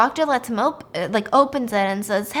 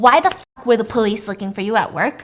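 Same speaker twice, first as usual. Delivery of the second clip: put-on raging, angry outburst. Retelling a story where the nurse confronts him at the door: imitating someone raging. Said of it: "she's raging, she's mad, she's pissed".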